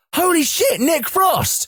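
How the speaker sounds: a high-pitched shout full of shock. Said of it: "and we shouted".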